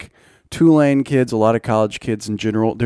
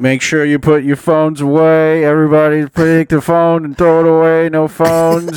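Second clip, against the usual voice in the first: tinny, loud, high-pitched intercom speaker announcement voice; 5 semitones higher, 6 dB louder than usual. Retelling a woman's announcement, in a drive-through speaker voice. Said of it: "She sounded like she was a drive-through speaker".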